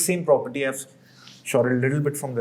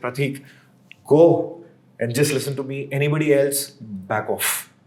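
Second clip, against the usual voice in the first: ordinary delivery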